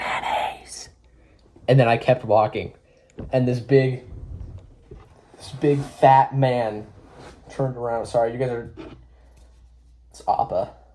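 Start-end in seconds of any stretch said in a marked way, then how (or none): 0.0-0.9 soft, breathy whisper right up close. Retelling whispering a word into a passing man's ear: retelling a whisper. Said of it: "I went in his ear".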